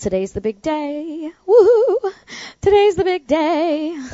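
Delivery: high, loud, excited whoop.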